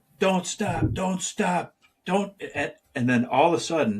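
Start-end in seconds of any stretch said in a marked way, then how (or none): 0.2-2.3 mock high, bossy screaming. Retelling a guy on the trail screaming at everybody: imitating a man screaming. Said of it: "he was screaming at everybody".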